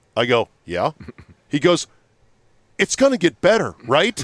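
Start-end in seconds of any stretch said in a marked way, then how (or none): 2.8-4.3 rushed, desperate, pleading tone. Retelling a man's question about the show on the hallway speaker; imitating a desperate voice. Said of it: "In a desperate sort of voice".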